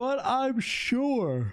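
very high, stretched-out, yawned-through words. Someone saying they haven't played Hebo in a long time, yawning mid-sentence. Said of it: "excuse me, yawning".

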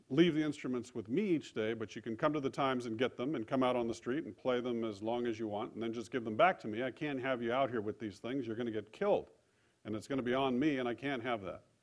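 ordinary talk, nothing marked

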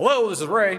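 put-on shrill, high, loud New Jersey accent. Speaker retells a phone call, quoting Ray answering, imitating Ray's New Jersey accent. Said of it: "in his New Jersey accent".

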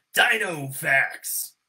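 monster truck rally announcer voice. Redoing the intro as asked, in monster truck rally announcer voice. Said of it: "Monster Truck Rally".

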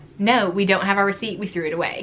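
ordinary delivery

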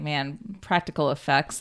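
ordinary talk, nothing marked

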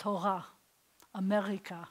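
Israeli accent, r said far back in throat. Teaching how Israelis pronounce the letter, showing an Israeli guttural R. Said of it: "they'll say it way back here like this".

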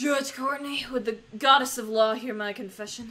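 put-on Southern accent. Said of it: "she becomes more and more Southern".

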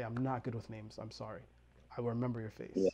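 ordinary delivery

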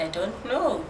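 ordinary delivery

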